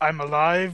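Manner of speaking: ordinary talk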